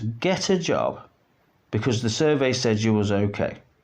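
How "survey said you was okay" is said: normal talking voice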